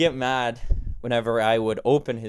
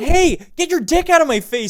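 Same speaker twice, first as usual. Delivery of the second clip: shrill, very loud, high-pitched full-volume yell; 8 dB louder than usual. Suggesting what to shout at a man in the bathroom: yelling. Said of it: "Just yell that like".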